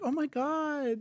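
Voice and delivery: very high, swooning fangirl voice. Imitating how Swifties react to Kelce: imitating Swifties' voice. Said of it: "I don't know why we both did that voice".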